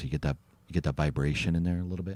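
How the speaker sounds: very low voice. Showing how to get vibration through a speaker, talking really low. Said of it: "kind of talk really low".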